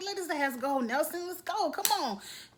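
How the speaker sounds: high-pitched hollering. Retelling how you shouted at the TV during the hall brawl, retelling a yell at the TV. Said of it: "I'm yelling at the T V".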